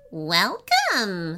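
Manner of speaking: delighted, gleeful impish voice. A narrator reads a tiny blue imp welcoming a boy, gleeful. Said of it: "said a gleeful voice beside him".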